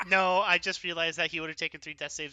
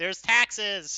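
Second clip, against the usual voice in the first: shouting in a knight character voice; 4 semitones higher, 4 dB louder than usual. Voicing a knight who objects to a claimed deed: in-character shout. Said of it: "the Vokhtar Knight shouts".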